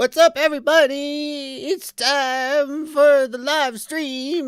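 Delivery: very slow, high-pitched drawl with words stretched out. Replaying own stream greeting, heard with delay: accidental Bill Cosby impression. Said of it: "I was accidentally doing a Bill Cosby impression".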